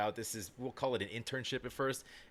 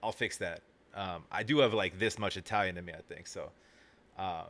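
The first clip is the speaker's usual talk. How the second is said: ordinary delivery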